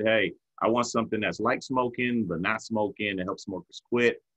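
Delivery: ordinary talk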